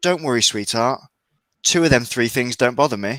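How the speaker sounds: dead-serious, matter-of-fact, earnest delivery. Retelling a girlfriend's reply to a joke line: imitating someone deadly serious. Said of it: "serious as an Ebola covid hybrid".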